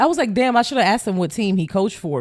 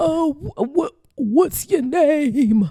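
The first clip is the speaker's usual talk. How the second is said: put-on high elderly man's voice, one word drawn out; 7 semitones higher than usual. Retelling how an old man stopped her after a coffee run: imitating an old man's voice. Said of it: "this is how he sounds like".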